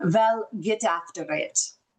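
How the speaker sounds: put-on thick heavy Dutch accent. Recalling what a man he loved always told him as a kid, thick Dutch accent. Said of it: "he had a very thick Dutch accent".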